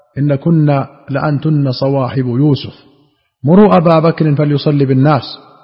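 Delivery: normal talking voice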